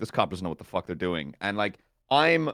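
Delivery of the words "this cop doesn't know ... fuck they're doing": low, muttered mumble under the breath. Retelling a lawyer overheard talking to a suspect, imitating a mumble. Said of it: "I hear the lawyer just mumble like".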